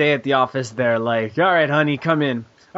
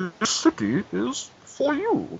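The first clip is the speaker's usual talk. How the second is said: muffled put-on Scottish voice, higher and quieter; 8 semitones higher, 6 dB quieter than usual. Performing on request with hands in front of mouth: muffled Sean Connery voice. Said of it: "put your hands in front of your mouth and talk like Sean Connery".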